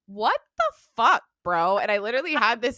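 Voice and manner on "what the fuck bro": mock disbelieving scream, raised and swooping. Retelling the moment of finding the robot vacuum on the computer: retelling yelling at a robot. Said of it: "screaming at this robot".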